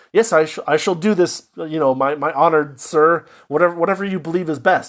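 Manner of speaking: put-on sincere tone. Retelling a story character's line to an honored sir: imitating a character sounding sincere. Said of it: "he sounds so sincere".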